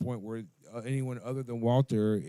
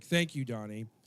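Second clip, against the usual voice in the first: put-on mocking tone. Retelling how a character answers being told his phone is ringing: imitating a mocking tone. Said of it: "he was mocking Walter".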